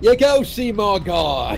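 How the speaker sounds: high infomercial-style sales pitch. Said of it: "He sounds like an infomercial".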